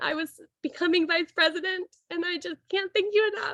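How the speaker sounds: speaking through tears. Thanking a mentor at a ceremony, crying while speaking. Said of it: "I knew I would cry".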